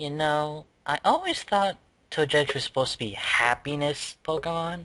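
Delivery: plain reading voice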